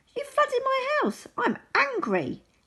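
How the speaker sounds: very high, squeaky voice. Narrating a story, voicing Mole in his high squeaky voice. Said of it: "said Mole in his high squeaky voice".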